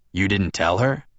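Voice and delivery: ordinary talk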